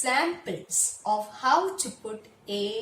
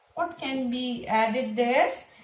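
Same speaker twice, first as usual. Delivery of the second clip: usual speaking voice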